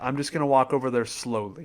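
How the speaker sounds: usual speaking voice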